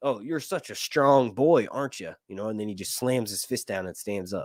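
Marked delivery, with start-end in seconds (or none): 0.0-2.1 mock taunting put-on voice. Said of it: "exactly what Aegon says is".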